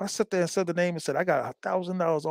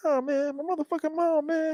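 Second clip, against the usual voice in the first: very high-pitched, youthful voice; 12 semitones higher than usual. Recalling friends mocking how he used to talk, he imitates it: higher-pitched younger voice. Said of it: "I had a higher pitched voice".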